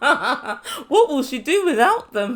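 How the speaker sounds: speaking slowly through laughter.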